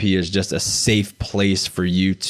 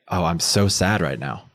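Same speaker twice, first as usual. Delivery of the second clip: put-on dry, matter-of-fact delivery, no emotion shown; 3 semitones lower than usual. Retelling own answer in group therapy: imitating own deadpan delivery. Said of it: "with a completely straight face".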